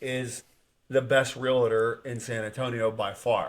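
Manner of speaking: plain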